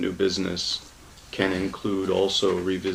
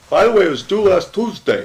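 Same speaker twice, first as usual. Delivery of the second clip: put-on New York accent, very loud and very high; 12 semitones higher, 11 dB louder than usual. Acting out a late bill notice in a meeting: put-on New York accent. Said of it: "The New York accent was deliberate".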